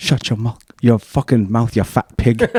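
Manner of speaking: put-on British accent, child voice. Quoting a British kid from a video: imitating a British kid's accent. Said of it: "Anything with the British accent makes it funnier".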